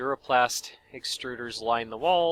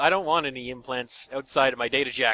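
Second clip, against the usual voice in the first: ordinary delivery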